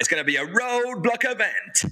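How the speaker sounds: high, hyped-up UK garage MC style. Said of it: "the sort of U K garage voice".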